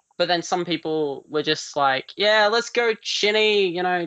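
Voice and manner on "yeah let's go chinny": insincere, sarcastic, pitched-up acted cheer. Retelling how some people reacted to the speaker's account, imitating very sarcastic people. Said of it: "very sarcastic".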